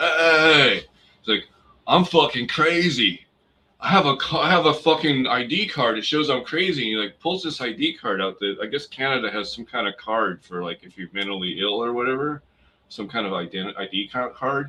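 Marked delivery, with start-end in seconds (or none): 0.0-6.8 imitated drunk-sounding man, higher and louder. Retelling a stranger on the street: imitating a half-drunk man. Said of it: "sounds like he's half fucking drunk".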